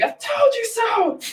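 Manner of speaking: shrill, very high, drawn-out triumphant scream. Retelling cheering on a goal to a restaurant crowd: retelling own scream. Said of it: "me just screaming".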